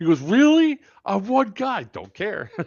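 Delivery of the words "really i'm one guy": very high, shrill, drawn-out shouted yell. Retelling what the guy behind the tree kept saying: imitating someone yelling. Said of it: "that's what he's yelling right now".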